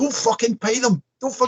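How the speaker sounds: put-on scream, very high and piercing. Retelling a man at a chippy door screaming at staff: imitating a man screaming. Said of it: "he's screaming at them".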